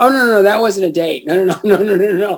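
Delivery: put-on defensiveness. Retelling a man's answer when asked about a girl from Memphis, mock-defensive. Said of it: "he started getting really defensive".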